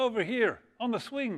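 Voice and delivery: put-on terrible Irish accent, very high. Telling a joke, voicing a voice from outside in a terrible irish accent. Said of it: "my terrible Irish accent".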